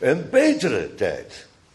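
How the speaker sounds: main stress placed on the word betere. Explaining why the adjective takes the stress in this phrase: stress on betere. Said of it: "met de nadruk op beter".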